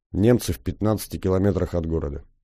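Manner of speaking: ordinary delivery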